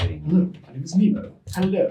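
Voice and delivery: slightly nervous, a little jittery. Voicing Nemo nervous before a date: nervous Nemo voice. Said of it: "Nemo's, like, a little bit nervous for the date".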